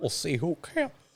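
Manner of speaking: high-pitched croaky put-on voice, pitched way up. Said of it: "heavy on the Kermit".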